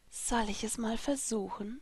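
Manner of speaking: very quiet, teasing, seductive, hushed half-whisper. The narrator leans to a companion's ear and asks him, half-whispering. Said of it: "flüsterte ich".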